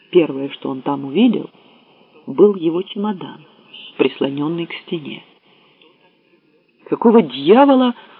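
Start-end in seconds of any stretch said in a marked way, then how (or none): 6.9-7.9 very loud, high, sudden blurted outburst. A man sees his suitcase propped against the office wall: bursting out. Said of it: "вырвалось у него".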